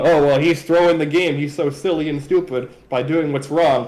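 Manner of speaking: ordinary talk, nothing marked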